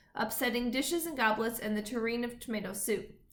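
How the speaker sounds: ordinary delivery, nothing marked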